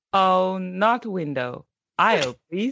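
put-on old man's voice speaking learner English. Retelling the grandpa repeating English phrases from videos: imitating Gong Gong practicing English. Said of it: "he'd be like".

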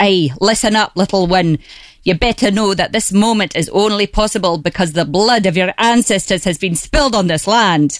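ferocious Scottish voice. Retelling what a talking mushroom said: ferocious Scottish voice. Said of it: "It was a Scotsman".

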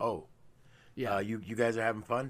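put-on dry, flat, expressionless delivery. Recounting a character walking in on a playful moment, retelling a deadpan line. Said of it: "he completely deadpans it".

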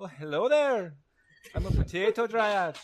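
put-on Irish accent, squeaky and very high. Player voicing a potato dryad meeting the group, in an irish accent. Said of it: "why are they Irish?".

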